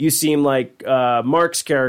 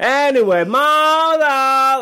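put-on scream, higher pitch; 12 semitones higher, 4 dB louder than usual. Retelling a scene in which Tommy screams up into the sky: imitating Tommy screaming. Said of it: "he just starts screaming up into the sky".

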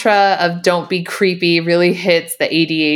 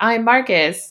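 stiff zombie-like voice, higher pitch; 4 semitones higher than usual. Retelling a movie scene where a character relearns talking: imitating zombie-like speech. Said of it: "he's still very zombie-like".

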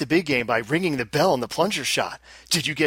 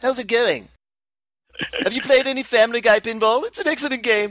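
put-on cartoon baby voice, higher; 7 semitones higher than usual. Doing impersonations for bonus points: Stewie impression. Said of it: "should I just do impersonations?".

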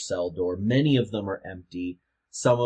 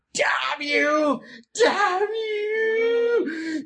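screaming, higher, louder; 5 dB louder than usual. Narrator voicing a prisoner slamming against the bars at Eleanor, screaming. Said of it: "he's screaming at you".

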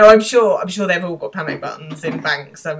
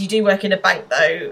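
ordinary talk, nothing marked

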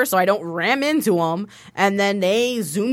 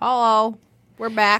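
words mushed, talking through a full mouth. Host returns from the break with a pretzel in the mouth, talking with mouth full. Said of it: "I had a pretzel in my mouth".

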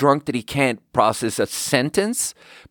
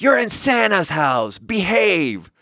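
put-on high-pitched, scolding screech; 7 semitones higher than usual. Retelling a guest who stood behind the speaker and screamed: retelling a scream. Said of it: "she screams".

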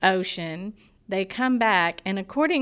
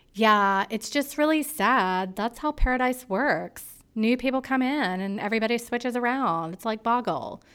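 comforting, consoling, reassuring tone; 3 semitones higher than usual. Retelling how she went to talk to upset Lacey, doing an impression of a woman consoling. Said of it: "That was an excellent impression".

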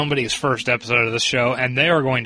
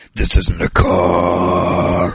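low, slow, gravelly growl. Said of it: "He tries to do the Batman thing".

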